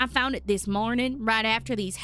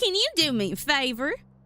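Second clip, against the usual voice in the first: put-on country twang, higher; 4 semitones higher than usual. Voicing Susie Rabbit in a game: country twang. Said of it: "a nice little country twang".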